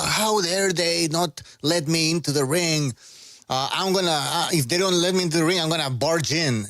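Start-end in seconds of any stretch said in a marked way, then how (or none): none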